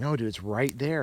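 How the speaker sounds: plain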